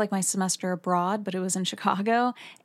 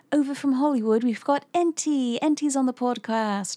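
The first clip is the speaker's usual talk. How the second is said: put-on New Zealand radio announcer accent, pitched up; 5 semitones higher than usual. Imitating new zealand radio show hosts introducing a guest: new zealand accent. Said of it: "I always love doing the New Zealand accent".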